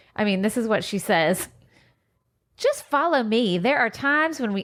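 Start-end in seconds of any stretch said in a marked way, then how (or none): 2.6-4.7 put-on American Southern accent. Reading a crafting booklet's words aloud in Suzanne's voice: Southern accent. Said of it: "I'm giving her a Southern accent".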